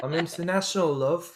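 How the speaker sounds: put-on British accent. Joking about speaking in a british accent: put-on british accent. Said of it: "with a British accent".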